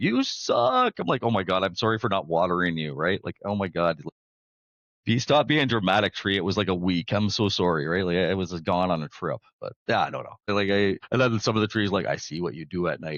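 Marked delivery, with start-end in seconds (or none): 0.0-0.9 squeaky, very high screaming voice, taunting. Joking about unwatered houseplants yelling at their owner, imitating a screaming plant. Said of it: "they're all screaming like".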